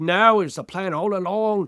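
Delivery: bad put-on Australian accent, slow. Quoting someone's reply that it was a plan, in an awful Australian accent. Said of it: "that was my awful Australian accent impersonation".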